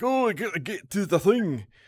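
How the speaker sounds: very high, clumsy American-sounding bad fake Scottish accent. Praising a genuine glaswegian performance, mocking a crummy american faking a scottish accent. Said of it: "some crummy American being all like".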